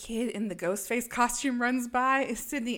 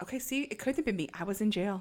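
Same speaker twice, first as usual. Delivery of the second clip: ordinary delivery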